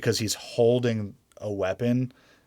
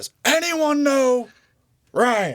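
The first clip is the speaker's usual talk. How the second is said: very high, loud, drawn-out, exasperated, frustrated yell; 8 dB louder than usual. Imitating a captain yelling at soldiers: imitating a frustrated yell. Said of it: "where he just starts yelling".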